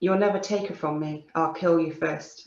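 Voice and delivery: plain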